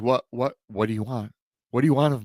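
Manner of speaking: frightened stammering. Telling a story where a man faces a werewolf, stammering and scared. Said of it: "He stammers".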